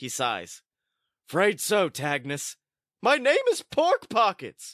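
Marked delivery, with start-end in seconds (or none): 3.0-4.7 very high, squeezed, gravelly falsetto. Called Tagnus, the cool party dude corrects his name in Pork Pockets gravelly falsetto. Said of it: "And your truth is that you are a cool, cool party dude whose name is [name]. ... Never heard a gravelly falsetto before".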